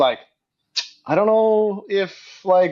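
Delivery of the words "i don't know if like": joking, teasing, high-pitched, drawn-out delivery. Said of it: "she was just joking".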